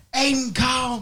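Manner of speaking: very high, shrill, high-pitched scolding yell. Retelling how mom yelled a child's name in a crowded aquarium: imitating mom yelling. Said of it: "my mom yells".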